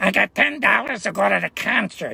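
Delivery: native hometown Chicago accent. Speaker contrasting a Californian way of talking with how they grew up, in a Chicago accent. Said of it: "I grew up on".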